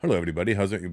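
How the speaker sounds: put-on Indian accent, held stiff and straight. Explaining how to do a voice, the speaker demonstrates an indian accent. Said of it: "You can't just do an Indian voice like".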